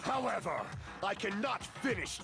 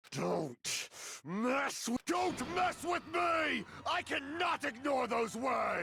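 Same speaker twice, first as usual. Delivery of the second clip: sudden angry outburst; 6 semitones higher than usual. Answering a remark about not battling: sudden angry outburst. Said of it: "Why are you angry all of a sudden?".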